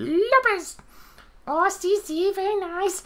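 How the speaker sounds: very high, squeaky hand-puppet voice. Presenting a hand puppet as in South Park: Jennifer Lopez hand puppet voice. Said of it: "I'm actually doing the hand puppet thing".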